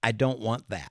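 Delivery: put-on, grave, very solemn, dead-serious tone. Retelling a two-year-old twin refusing shots at the doctor: imitating a very solemn child. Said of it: "very, very solemnly says".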